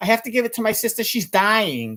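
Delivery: speaking with a New York accent. [name] explains what he meant about his sister, Upper West Side New York accent.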